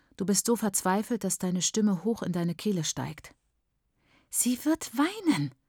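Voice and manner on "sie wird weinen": high, hissing voice, spat out. Mbuya Riley's housekeeper answers the woman asking for a place to stay, hissing. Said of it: "zischt die Haushaltshilfe".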